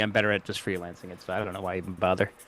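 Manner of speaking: fast, low-voiced rush. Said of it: "You're talking so fast".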